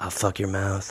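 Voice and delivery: close whisper, right in the ear. Acting out Lee creeping up behind Kerr: whispering in someone's ear.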